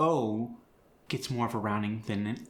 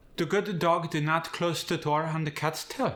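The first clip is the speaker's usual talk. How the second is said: English in a Korean accent, pitched up; 6 semitones higher than usual. Repeating a practice sentence for listeners, in a Korean accent. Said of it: "With a Korean accent".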